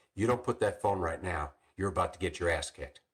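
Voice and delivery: put-on angry police chief voice. Retelling a police chief's threat in the classroom: imitating an angry police chief. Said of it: "he was pissed in the classroom".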